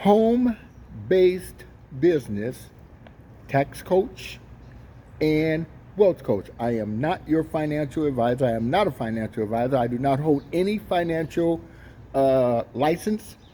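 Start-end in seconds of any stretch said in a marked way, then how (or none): 0.0-6.5 very slow delivery. Introducing what they teach to the audience, really slow. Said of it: "I'm saying that really slow today".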